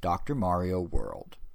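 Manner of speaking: mock-unenthusiastic, flat, level announcer read. Imitating the man who ends the game, mock-unenthusiastic flat announcement. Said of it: "why are you not more excited about your game".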